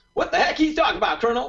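clumsy fake Southern accent. Quoting a movie pilot's line: imitating a fake southern accent. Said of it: "that sounds like me trying to do a Southern accent".

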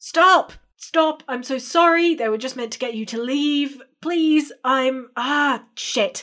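high, loud, frantic shouting. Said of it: "you hear a voice going".

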